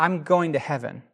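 ordinary delivery

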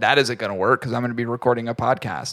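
usual speaking voice

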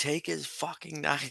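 screaming. Retelling what was yelled during a watched fight: imitating own screaming. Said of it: "I just kept screaming".

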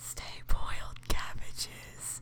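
soft, hushed whisper. Asked to take everyone out at the end, whispered. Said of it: "I'm going to whisper it".

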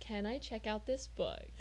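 put-on hushed, rhythmic talk. Speaker retells a man asking to check out a book, imitating soft, rhythmic talking. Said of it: "talks super softly and, like, rhythmically".

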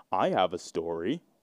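low stiff robot-like voice.

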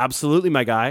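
mock overly agreeable, eager-to-please tone. Imitating a man demanding a wallet while staying personable, overly agreeable tone. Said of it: "This overly agreeable tone".

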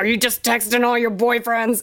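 put-on booming voice. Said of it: "he had this booming voice".

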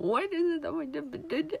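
high, tearful sobbing while speaking. Retelling own words while crying in the bathroom: imitating own past crying. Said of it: "I was sitting there crying and being like".

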